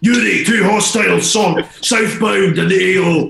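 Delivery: loud screaming in a Scottish accent. Speaker doing his best impression of a Call of Duty character, screaming Soap MacTavish impression. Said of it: "my best impression ... screaming at you".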